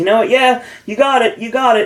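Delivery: taunting mocking tone. Act out Ethan's answer after he thinks about it, imitating a mocking tone. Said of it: "It's very mocking tone".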